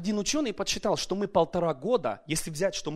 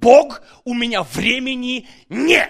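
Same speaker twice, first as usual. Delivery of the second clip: loud shouting in shock; 6 semitones higher, 14 dB louder than usual. Telling how he reacted to having only 1.5 hours a day, retelling a yell. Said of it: "Я начал орать".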